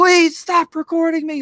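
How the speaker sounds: acted, very high-pitched screaming, begging tone. Retelling how a woman curled up on a store floor: imitating someone screaming.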